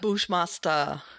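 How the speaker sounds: thick, exaggerated Jamaican accent on the name. Echoing how Bushmaster pronounces his name: Bushmaster's exaggerated Jamaican accent. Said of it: "In that rather exaggerated Jamaican accent".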